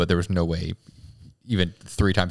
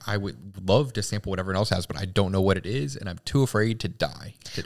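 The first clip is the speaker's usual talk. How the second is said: ordinary talk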